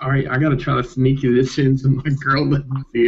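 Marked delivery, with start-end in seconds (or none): none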